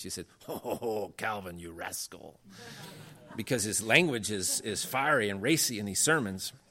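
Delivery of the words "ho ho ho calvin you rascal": put-on speaking with French accent. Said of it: "nice French still accent".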